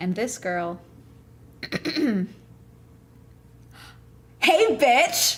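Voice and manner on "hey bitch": brash, loud, high-pitched shout. Telling how a girl greeted her at work, retelling a loud yell. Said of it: "Loud as shit".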